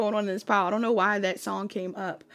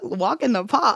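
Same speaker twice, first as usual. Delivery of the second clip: raised Boston or New York accent; 3 semitones higher, 5 dB louder than usual. Repeating a phrase during a card reading, boston or new york accent. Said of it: "Who has an accent?".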